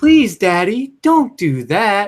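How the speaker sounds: high-pitched, slow, creepy voice. Recalling a creepy kid from a horror film: Creepshow kid voice. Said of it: "but it's his voice".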